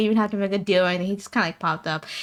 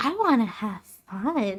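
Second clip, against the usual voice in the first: character voice in a higher register; 5 dB quieter than usual. Showing how the character Thea will sound: Thea voice, higher register. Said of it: "Thea's voice is on the higher register".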